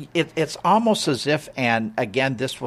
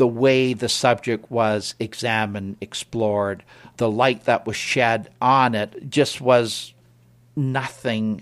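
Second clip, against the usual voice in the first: ordinary talk, nothing marked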